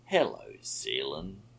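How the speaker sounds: nearly cheerful tone. A speaker greets a man returning to his ship, almost cheerfully. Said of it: "Ghost said almost cheerfully".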